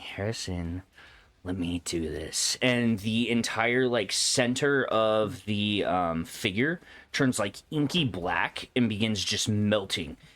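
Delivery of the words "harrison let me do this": smooth, silky woman's voice. Voicing a voice heard inside the player's head, silky smooth female voice. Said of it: "a sm- silky smooth female voice in the back of your head going".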